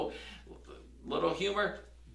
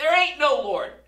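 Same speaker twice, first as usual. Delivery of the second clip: mock furious, high, very loud angry shout; 9 semitones higher, 10 dB louder than usual. Telling a story, acting out the atheist neighbour shouting back at the lady: retelling an angry shout. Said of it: "he would shout back".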